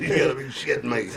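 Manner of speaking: normal talking voice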